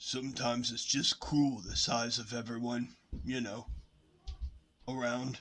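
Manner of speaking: patronising, superior, talking-down condescending tone. Recalling a remark to the person beside him, in a condescending tone. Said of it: "I would say in a condescending tone".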